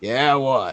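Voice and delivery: burly half-ogre voice. Voicing a burly half-ogre who was grabbed by the neck: burly half-ogre voice. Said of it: "this burly half ogre person".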